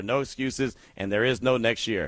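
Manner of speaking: ordinary talk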